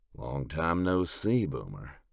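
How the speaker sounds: slow, unhurried, drawn-out drawl. A voice from the darkness greets Boomer, in Tongue's slow drawl. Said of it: "Tongue's slow drawl".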